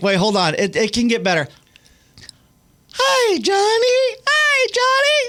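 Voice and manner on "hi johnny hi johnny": very high, very slow voice, every word stretched. Answering a request to hear the voice: Elmo voice. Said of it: "Let's hear your Elmo".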